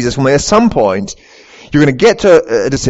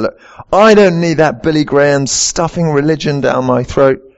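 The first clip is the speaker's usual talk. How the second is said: usual speaking voice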